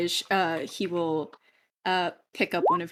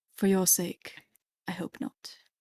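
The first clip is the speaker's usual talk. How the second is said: soft, hushed, breathy whisper, very close; 7 dB quieter than usual. Voicing a character leaning in close to a player: whispering in character. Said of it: "whispers in your ear".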